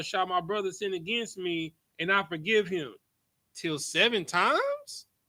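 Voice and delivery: rising, questioning intonation. Showing someone how this verse should be read aloud, reading it as a question. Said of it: "you gotta read it like a question mark".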